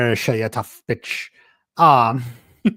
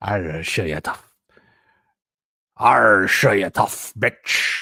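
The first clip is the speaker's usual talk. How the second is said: put-on pirate voice, lower; 4 semitones lower than usual. Redoing a line whose accent sounded more like a pirate than Irish, pirate voice. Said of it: "That's definitely more like a pirate".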